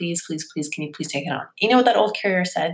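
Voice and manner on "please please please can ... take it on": soft, pleading, begging voice. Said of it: "They begged and begged and begged".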